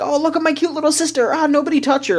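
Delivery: very high-pitched, doting, overprotective, fussing big-brother voice. Retelling how Kiawe acts about his sister: imitating overprotective Kiawe. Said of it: "very, like, overprotective of her and is like".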